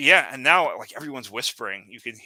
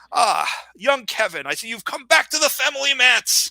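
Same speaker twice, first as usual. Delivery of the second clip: put-on very high, loud, boisterous, slightly drunk voice; 13 semitones higher, 4 dB louder than usual. Speaker voices Rees greeting young Kevin at the family feast, loud and a little drunk. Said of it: "he says in a loud voice, right, like sloshing his glass".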